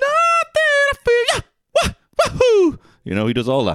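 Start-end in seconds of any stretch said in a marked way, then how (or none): 0.0-2.8 very high, very slow, loud squeaky character voice. Doing a quick nod in a bit: Mario voice. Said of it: "A little Mario".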